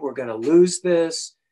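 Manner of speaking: angry, irritated, scolding, nagging tone. Retelling how a woman scolded them for being late: imitating someone complaining angrily. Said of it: "she was bitching at me".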